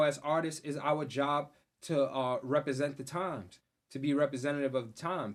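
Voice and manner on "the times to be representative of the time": normal talking voice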